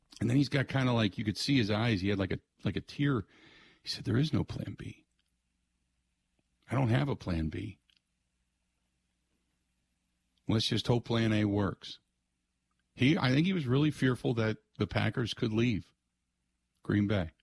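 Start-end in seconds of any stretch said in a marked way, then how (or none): 4.0-12.0 mild, gentle voice with no edge. Speaker retells Bob answering Bill about plan B: imitating Bob's very soft voice. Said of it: "Bob in that very soft voice".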